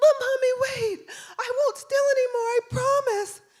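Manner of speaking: put-on play-acted, very high, tearful pleading child voice. A mother retelling her son's plea when sent away, imitating a crying plea. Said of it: "so he's crying".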